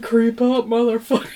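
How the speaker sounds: very loud zombie bellow at full volume. Imagining how a zombie would say the line: zombie voice. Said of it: "a zombie being like".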